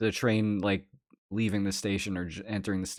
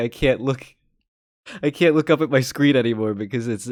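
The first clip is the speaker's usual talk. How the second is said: cracking up laughing mid-sentence; 3 semitones higher, 5 dB louder than usual. Unable to look at someone on screen, laughing while talking.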